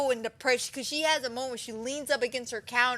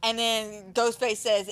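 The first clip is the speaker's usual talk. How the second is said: ordinary talk, nothing marked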